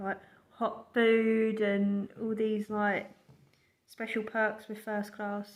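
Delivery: slow speech broken up by laughter. Recalling promised first-class train perks, laughing while talking. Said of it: "I'm just laughing about the fact".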